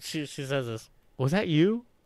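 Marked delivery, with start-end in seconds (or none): 1.2-1.8 mock furious tone, broken by laughing through words. Retelling how the other person confronted the speaker in the bathroom: imitating someone asking angrily while laughing. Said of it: "very angrily, but laughing".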